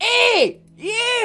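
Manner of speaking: shrill, very high screaming goblin voice. Narrating a game, voicing a goblin who screams at the players, goblin screaming. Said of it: "And he's screaming at you".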